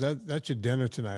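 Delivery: ordinary talk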